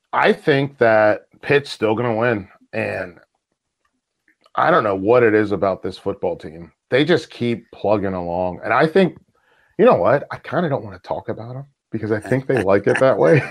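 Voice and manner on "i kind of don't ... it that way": quick, hushed, conspiratorial half-whisper. Asked who will win, the speaker talks about Pitt's team, half-whispering. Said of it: "I'm whispering right now".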